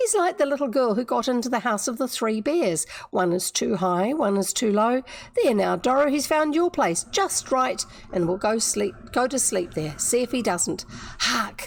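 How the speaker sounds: usual speaking voice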